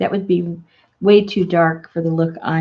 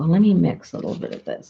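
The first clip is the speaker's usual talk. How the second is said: soft, half-under-the-breath muttering. Mixing paint colors while mumbling to oneself. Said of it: "I'm mumbling to myself".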